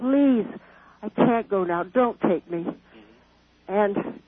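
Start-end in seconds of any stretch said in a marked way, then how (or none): 0.0-2.7 mock imploring, desperate, begging tone. Retelling how she begged not to die: imitating her own past begging. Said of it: "I kept begging".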